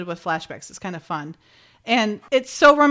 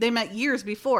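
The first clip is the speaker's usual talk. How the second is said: ordinary talk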